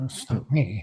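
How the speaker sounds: hushed whisper. Answering in character while the others look at you: whispering.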